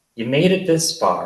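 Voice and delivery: ordinary delivery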